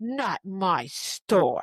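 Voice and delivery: furious, very angry delivery. Retelling what the woman at the bubble tea store said: imitating an angry woman. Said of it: "it's very angry".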